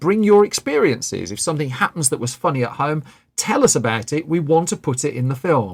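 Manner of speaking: plain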